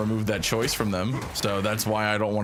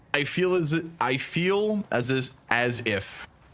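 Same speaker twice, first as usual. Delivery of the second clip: high-pitched stammering with repeated restarts; 5 semitones higher than usual. A man giving his own opinion, unexpectedly stuttering. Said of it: "I don't know why I'm stuttering".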